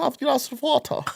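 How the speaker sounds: put-on German accent. Showing another speaker his German accent: put-on German accent. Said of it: "That's my German".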